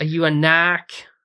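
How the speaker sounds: rough Boston accent attempt. Retelling a family member at a boston dinner table asking a question, attempted boston accent. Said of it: "I'm trying to do the the accent here".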